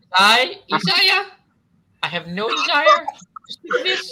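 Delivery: shrill, very high, loud birdlike voice. Isaiah speaks to the others, who ask why he sounds this way; high-pitched bird voice. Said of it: "why do you sound like a high pitched bird right now".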